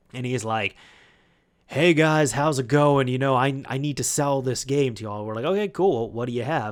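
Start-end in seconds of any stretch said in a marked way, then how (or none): 1.6-5.2 play-acted swaggering, boisterous, blustering man's voice. Telling of a man who came into the store to sell a game, imitating a boisterous man. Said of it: "a little boisterous".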